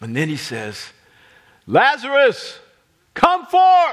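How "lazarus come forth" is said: very loud, shrill, high-pitched commanding shout. Retelling a command called to the dead man: imitating a loud call. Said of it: "in a loud voice".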